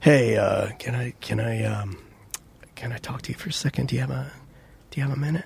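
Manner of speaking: soft, halting, stumbling, weirdly secretive mocking voice. Mocking a secretive boss who pulls staff aside: mocking imitation of a boss. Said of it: "if you think I'm making fun of him right now, I absolutely am".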